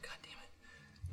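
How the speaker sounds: soft, slow, quiet whispered voice.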